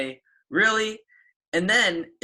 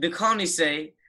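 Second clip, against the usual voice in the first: ordinary talk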